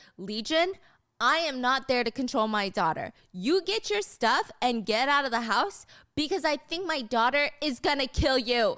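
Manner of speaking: plain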